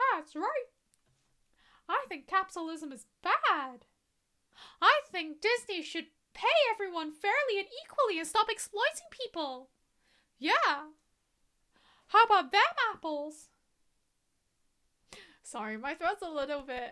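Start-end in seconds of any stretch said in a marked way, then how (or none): 1.9-13.5 put-on cartoon mouse voice. Joking about being hired as a knockoff Mickey: Mickey voice. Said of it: "it's not my best Mickey voice".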